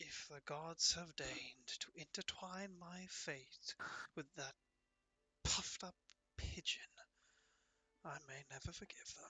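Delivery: very hushed whisper under the breath, barely audible. A player voicing Bagdemagus mutters to himself while marching toward a door, whispering under breath. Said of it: "whisper under his breath to himself".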